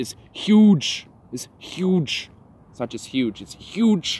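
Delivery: the word huge stretched out, high and loud.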